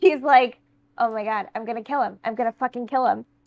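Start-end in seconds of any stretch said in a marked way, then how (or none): 1.0-3.2 muttered character voice, much quieter. The narrator voicing Holly Reese after the visitor leaves, Holly Reese muttering under breath. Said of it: "mutters under her breath".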